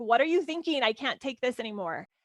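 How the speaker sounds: normal talking voice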